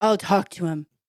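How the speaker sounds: put-on man's voice. Trying out a different voice for the joke's lady: put-on man voice. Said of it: "I'll do a man voice".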